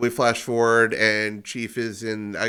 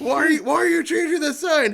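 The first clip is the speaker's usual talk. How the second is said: put-on screaming, higher and louder; 5 dB louder than usual. Reenacting a scene where someone screams at a man changing a sign: imitating someone screaming. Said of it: "you cut to him screaming at this poor man".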